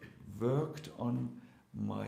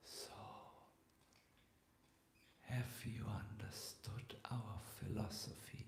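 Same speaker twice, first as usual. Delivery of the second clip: put-on strained whisper, much quieter; 12 dB quieter than usual. A devotee recalls being received in a room by Prabhupada: imitating Prabhupada's strained whisper. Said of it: "said in a whispering, a strained voice".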